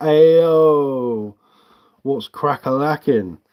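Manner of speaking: very slow, loud, high cartoon sidekick voice, "yo" stretched out. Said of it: "Someone's been watching too much Shrek".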